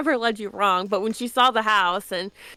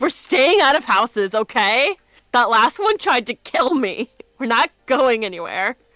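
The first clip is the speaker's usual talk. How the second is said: put-on grown man's tantrum, louder; 2 semitones higher, 5 dB louder than usual. Retelling a game moment, imitating Valdis's temper tantrum. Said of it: "this grown man just having a temper tantrum".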